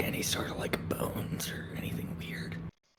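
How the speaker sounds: very quiet, hushed, barely audible whisper. Asking another character about bones while digging through dung: whispering in character. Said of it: "I'm gonna whisper".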